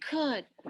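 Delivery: ordinary delivery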